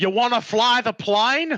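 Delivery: put-on Australian accent. Joking about a film scene, doing Michael Caine with an Australian accent. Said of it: "I'm making him Australian".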